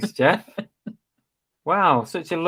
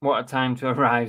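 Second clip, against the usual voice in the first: usual speaking voice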